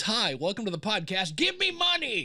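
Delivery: imploring, beggar-like voice.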